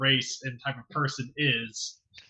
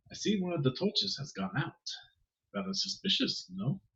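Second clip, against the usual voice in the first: gently whispered, hushed, slightly pitched up; 5 semitones higher, 9 dB quieter than usual. Narrator voices a character speaking to her: soft whisper. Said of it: "he's gonna softly whisper to her".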